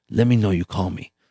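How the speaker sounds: imitated Brazilian accent. Retelling what Carlos Machado told him years ago: imitating Carlos Machado's Brazilian accent. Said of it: "he's got that Brazilian accent".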